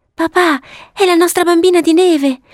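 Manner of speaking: very high-pitched, begging, pleading tone. Two sisters grab their father's hands, pleading. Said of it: "gli afferrarono supplichevoli le mani".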